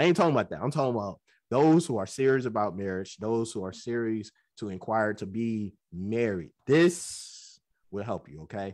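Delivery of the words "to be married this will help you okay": ordinary talk, nothing marked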